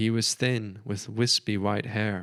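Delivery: ordinary delivery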